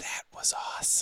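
creepy, breathy whisper, close, right in the ear. Answering what was whispered in someone's ear: retelling a whisper. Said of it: "I whispered in the one's ear".

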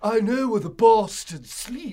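loud, high, belted-out bad English accent. Mocking a horribly miscast Jonathan Harker, do Keanu Reeves trying an English accent.

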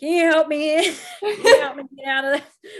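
loud, laughing, pleading voice. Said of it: "I just remember being like".

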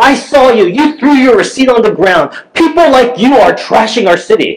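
high-pitched, accusing yell. Recounting a woman yelling at them over a receipt, retelling a yell. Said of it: "she's just yelling at me".

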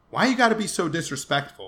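loud, angry, scolding yell. Telling a story, the speaker acts out a man on the street: retelling a man's yell. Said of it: "another man on the street yell at them".

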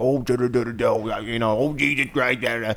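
thick put-on Maine accent, soft. Retelling how the speaker's dad talked to the firewood guy, in a wicked thick Maine accent. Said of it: "this wicked thick Maine accent".

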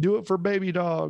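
put-on West Virginia accent, pitched high. Imitating the governor pushing vaccines with a dog: imitating governor's west virginia accent. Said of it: "this is just his accent".

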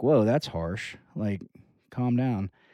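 normal talking voice

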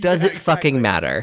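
ordinary talk, nothing marked

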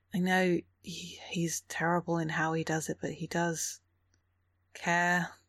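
slightly hushed, confiding tone. A game master voicing a character speaking to a player's character, slightly lowered voice. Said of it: "they lower their voice a little".

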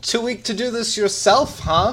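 high, loud, jeering, taunting shout. Entering the field, shouting up at someone in the corporate box, taunting. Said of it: "he shouts up at Braca".

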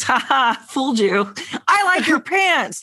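put-on really loud talking. Retelling what her visitor said to a pizza person at the door: retelling someone's really loud remark. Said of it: "like really loud".

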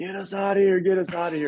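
desperate, high, panicked screaming, repeated twice. Retelling the mom and daughter waving and calling out: imitating people screaming. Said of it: "they start screaming".

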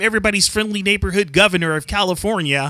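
ordinary talk

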